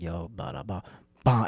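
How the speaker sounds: nonchalant, chill, low, slow, velvet-smooth delivery. Imitating a comic whose delivery is called velvet: imitating Napoleon's velvet-smooth delivery. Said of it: "His voice is like velvet".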